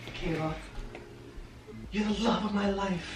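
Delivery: slow, mock romantic delivery.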